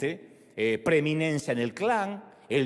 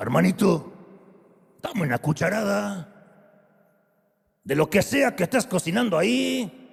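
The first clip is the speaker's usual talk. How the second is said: put-on guttural caveman voice; 3 semitones higher, 4 dB louder than usual. Narrating the Bible story, voicing Esau speaking to his brother, guttural caveman voice. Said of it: "con su voz eh, gutural y cavernícola".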